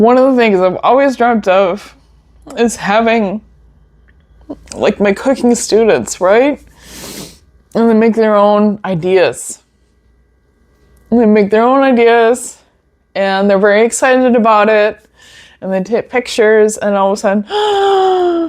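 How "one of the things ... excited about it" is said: moved, emotional voice, pitched up. Sharing something they've always dreamt of with the audience, getting emotional. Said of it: "This is why I'm getting emotional about it".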